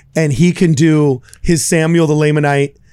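ordinary delivery

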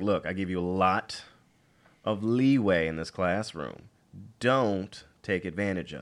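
slow, stern, firm no-nonsense put-on dad voice. A teacher showing how they warn the class, putting on a stern dad voice. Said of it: "sometimes you got to give them the dad voice".

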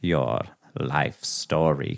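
menacing, slowed-down villain impression. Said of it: "That was pretty good".

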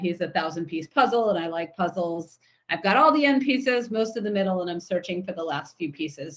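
plain

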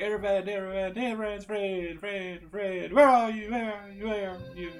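high, bouncing echo voice, each phrase tripled. Voicing the echo of a shout: echo effect voice. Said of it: "that's my best echo".

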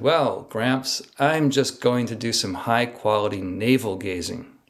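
heavily sarcastic tone. Retelling a reply to a grandfather's question about India: retelling a sarcastic reply. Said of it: "I very sarcastically said".

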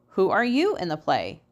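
ordinary delivery

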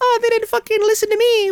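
very high-pitched devil voice. Joking about a picture of the devil: devil voice. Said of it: "we gotta change our voice to the devil".

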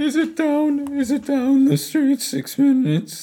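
very high-pitched, slow, drawn-out voice. Mimicking how the other speaker just sounded: imitating the other speaker. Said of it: "That's how you sound".

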